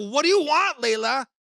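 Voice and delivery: high, angry, exasperated snap. Retelling snapping at daughter Layla after slamming the phone down: mock-angry outburst. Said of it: "I'm getting so angry".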